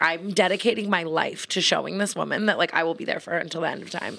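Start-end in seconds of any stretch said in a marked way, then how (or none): none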